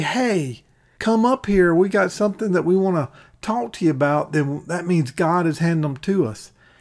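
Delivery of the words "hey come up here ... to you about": friendly voice. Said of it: "if they say".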